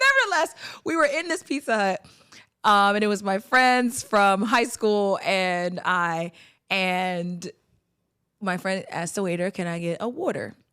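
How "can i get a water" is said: put-on low Philadelphia accent on the word "water". Retelling a friend ordering from a Pizza Hut waiter, Philadelphia accent. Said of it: "If you're from Philly, you know water".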